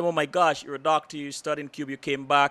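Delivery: ordinary delivery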